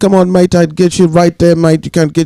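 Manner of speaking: put-on English accent with Jamaican tones. Imitating how a boxer talked to opponents: Lennox Lewis impression. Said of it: "that's how Lennox Lewis used to talk".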